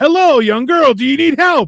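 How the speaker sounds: play-acted hostile tone. Retelling a Simpsons scene where a man offers help: imitating an aggressive-sounding man. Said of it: "But it sounded so aggressive".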